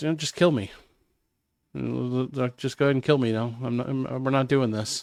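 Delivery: mock disconnected voice. Retelling a woman refusing to go to jail: imitating someone sounding detached. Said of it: "completely disconnected from".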